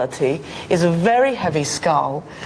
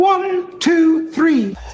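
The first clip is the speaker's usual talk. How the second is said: pitched-up, higher voice; 12 semitones higher, 3 dB louder than usual. Counting to three as directed: pitched-up voice. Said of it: "Just pitch up your voice".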